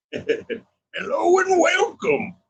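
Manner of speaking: put-on high, slow old prospector drawl.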